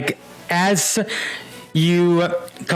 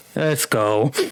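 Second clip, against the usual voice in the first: put-on sulky voice, lower; 5 semitones lower than usual. Retelling a scene where a girl walks off after losing: imitating a sulky character. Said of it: "jumps off the box sulking".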